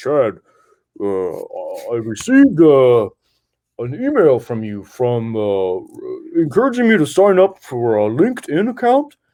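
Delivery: animated delivery, pitch swooping up and down. Retelling how Alvin Plantinga marched up about an email: Alvin Plantinga impression. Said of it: "That was a great impression too".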